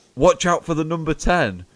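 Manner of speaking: mock, very high yell. Retelling what a fan in the crowd kept shouting at the defence: imitating a fan shouting. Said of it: "he kept shouting".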